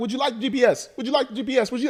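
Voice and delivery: very high, insistent, weird put-on German accent. Retelling a woman imploring a man buying a car, in a weird German or European accent. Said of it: "like I want to say German accent or European".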